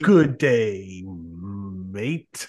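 the word mate stretched and drawn out. Retelling how the driver greets people in Australia: imitating his exact greeting. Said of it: "That, that exact way".

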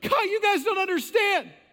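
put-on high, yelled outburst. Acting out Rhoda running into the church: imitating Rhoda yelling. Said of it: "she starts yelling".

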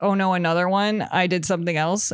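plain

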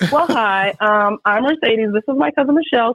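put-on young woman voice.

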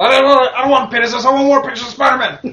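very loud, high-pitched shout at full blast. Joking about how the people manager sounds, do a J. Jonah Jameson voice. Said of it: "kind of sounds like J. Jonah Jameson".

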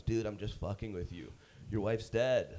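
normal talking voice

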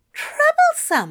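scandalized, affronted, high gasped delivery. A man reacts to his companion's muttered complaint with a scandalized gasp. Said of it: "gasped, scandalized".

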